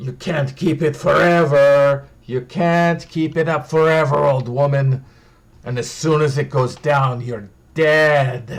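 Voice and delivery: beast-like snarling voice, last word drawn out. Narrating a tabletop scene, voicing a character who threatens an old woman, snarling. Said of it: "you snarl".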